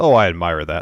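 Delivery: ordinary talk, nothing marked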